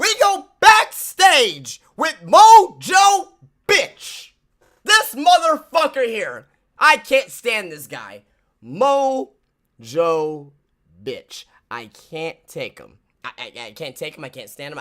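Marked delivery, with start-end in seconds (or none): 0.0-10.5 very loud, swooping, raised-voice yelling rant. Reacting to tonight's SmackDown, the speaker is yelling. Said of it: "I'm yelling because if you saw SmackDown tonight".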